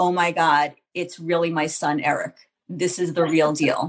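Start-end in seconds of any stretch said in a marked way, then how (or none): none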